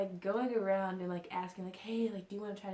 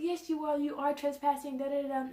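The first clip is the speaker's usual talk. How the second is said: mock security guard voice, high, insistent yelling; 7 semitones higher, 4 dB louder than usual. Retelling how security caught the girls: imitating security yelling. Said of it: "yelling at us".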